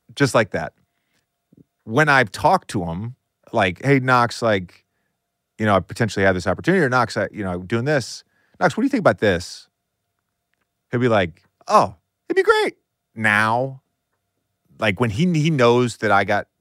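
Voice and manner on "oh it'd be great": squeaky voice pushed very high. Speaker retells how Knox answers when asked, imitating Knox's high-pitched voice. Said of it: "Every time in his high-pitched voice".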